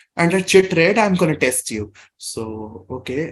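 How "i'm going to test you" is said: ordinary delivery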